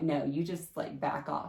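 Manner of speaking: ordinary talk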